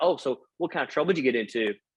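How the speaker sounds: ordinary delivery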